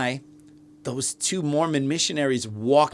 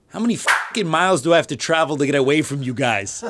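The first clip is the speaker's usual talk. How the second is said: imitated own New York way of speaking; 3 dB louder than usual. Retelling what was said to two missionaries: imitating own New York way of speaking. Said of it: "I said it in a very New York kind of way".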